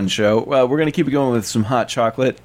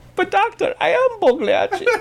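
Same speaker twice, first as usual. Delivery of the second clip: cartoon Italian character voice. Retelling the joke in character as Pagliacci, in a Mario voice. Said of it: "Now it's Super Mario?".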